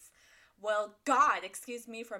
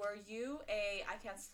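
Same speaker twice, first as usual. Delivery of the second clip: plain reading voice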